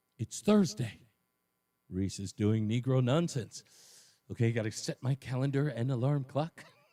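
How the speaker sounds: low, just-woken-up voice. Retelling how Bob acts when Thursday comes: imitating Bob. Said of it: "he wakes up and he goes".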